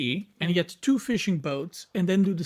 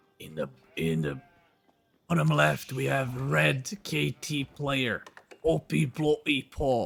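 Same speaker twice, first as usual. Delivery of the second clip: low, loud stage whisper; 5 semitones lower than usual. Introducing a player in the bottom left, in a loud whisper. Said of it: "loud whisper".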